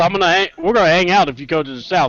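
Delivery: ordinary talk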